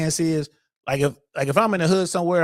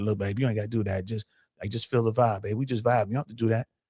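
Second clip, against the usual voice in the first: hushed, intimate, soft half-whisper; 6 semitones lower, 6 dB quieter than usual. Retelling stopping a dance partner from twerking: retelling a half-whisper in her ear. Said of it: "and I'll whisper in their ear".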